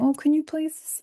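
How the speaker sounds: put-on high, sickly sweet, sugary baby talk. Describing how Mum calls asking for favours, imitating baby talk. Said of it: "And she'll call me and be like".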